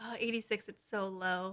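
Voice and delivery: put-on pretentious voice. Teasing the other speaker by mimicking pretentious people, mock pretentious tone. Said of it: "one of those pretentious people who's like".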